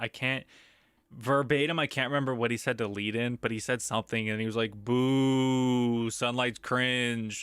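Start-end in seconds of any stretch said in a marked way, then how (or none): none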